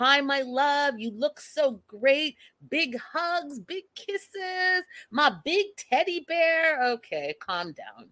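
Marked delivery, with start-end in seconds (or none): 0.0-6.8 laid-on-thick, high, slow, doting sweet gush. Retelling how Abby greets him on the phone: imitating Abby laying it on thick. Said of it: "she's, like, laying it on thick".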